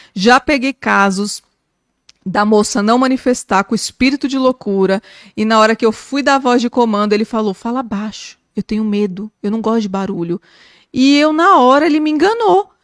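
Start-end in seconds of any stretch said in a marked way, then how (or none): 7.5-10.4 put-on meek, gentle-speaking demon voice. Retelling what a demon said during a prayer: imitating a meek-speaking demon. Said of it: "tem demônio que fala manso".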